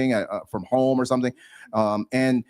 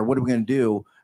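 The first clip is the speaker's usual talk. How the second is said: usual speaking voice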